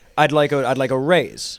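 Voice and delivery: ordinary talk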